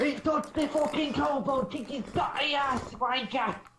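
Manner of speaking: shrieking, very loud, awful put-on English accent. In a game, urging the group to attack a man, in a bad English accent. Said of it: "You might need a few more English accent lessons".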